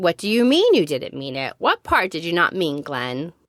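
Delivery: ordinary delivery, nothing marked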